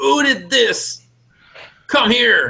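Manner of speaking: shrill, very high screaming outburst. Game master voices the king to the players' characters, screaming out. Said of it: "And he screams out".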